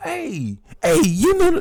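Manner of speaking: very loud, very high, swooping shout. Interrupting another speaker describing gang alliances: yelling. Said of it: "I'm yelling, my bad".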